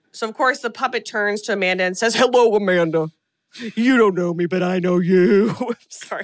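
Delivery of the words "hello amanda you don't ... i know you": deep, proclaiming tent revival preacher voice. Acting out what the puppet says, in a tent revival preacher voice. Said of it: "You sound like a tent revival preacher or something".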